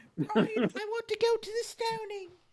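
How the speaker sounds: shrill, very high British woman voice. Speaker showing the voice they find easier to do: Terry Jones British woman voice. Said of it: "British woman is a little easier".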